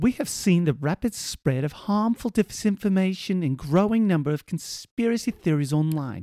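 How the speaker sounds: bad put-on English accent. Told to do an English accent, reading a statement aloud in a bad English accent. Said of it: "The only disinformation there was my awful accent".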